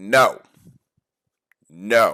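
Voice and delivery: stern, emphatic, firm and loud. Speaker demonstrates how to answer an urge, firm and loud. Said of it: "Say it firmly and say it loudly".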